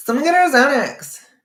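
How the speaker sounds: put-on high, loud, nasal voice with a Californian accent. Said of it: "And she says it like that".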